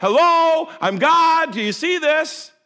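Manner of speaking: high, loud booming yell.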